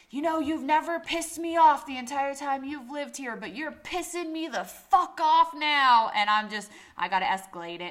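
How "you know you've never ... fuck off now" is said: full-on yelling, high-pitched. Speaker retells a man yelling at them by his car, retelling a yell. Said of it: "he's yelling at me going".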